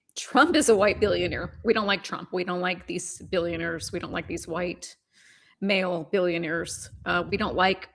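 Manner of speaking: ordinary talk, nothing marked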